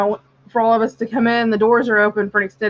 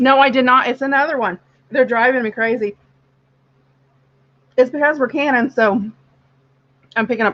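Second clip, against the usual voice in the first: talking while eating, higher; 3 semitones higher than usual. Talking to the group while eating. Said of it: "Sorry, I was eating".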